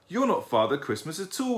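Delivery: cross, plainly annoyed. He answers the young lady who asked if he's all right, crossly. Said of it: "he said crossly".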